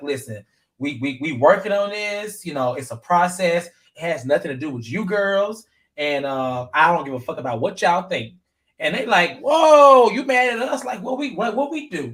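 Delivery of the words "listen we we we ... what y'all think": usual speaking voice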